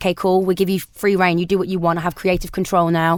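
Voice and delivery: ordinary talk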